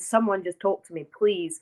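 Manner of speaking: put-on tearful voice. Recounting asking for help on their knees, the speaker is retelling a tearful plea. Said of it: "I was crying so much".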